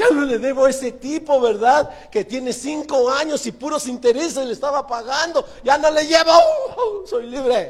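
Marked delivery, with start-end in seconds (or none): 5.6-7.7 high, jubilant, happy shout. Speaker recalling the day they received their deeds, retelling a joyful shout. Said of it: "Y gritaba así de bonito".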